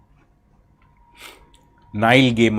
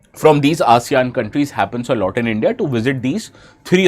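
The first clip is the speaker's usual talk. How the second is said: ordinary talk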